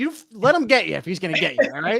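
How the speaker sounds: scream, called out. Retelling screaming at a neighbor while playing football: retelling a scream. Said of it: "I screamed at him like".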